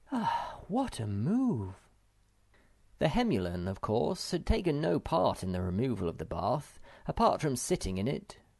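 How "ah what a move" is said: great sigh, very drawn out and slow. Reading a character who sat mopping her forehead, exclaiming with a great sigh. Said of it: "she gave a great sigh and exclaimed".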